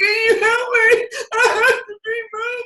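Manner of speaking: acted-out crying, very high, drawn out, tearful. Retelling teachers who came to the door crying: imitating crying teachers. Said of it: "they're standing there crying".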